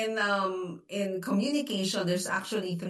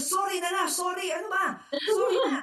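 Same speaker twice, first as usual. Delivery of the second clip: angry voice. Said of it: "kasi nagagalit ako".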